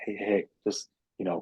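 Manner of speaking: soft, gentle, calm therapist voice. Recalling how Bassam swooped in when the speaker beat himself up: imitating Bassam's gentle voice. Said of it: "he has like this gentle voice too".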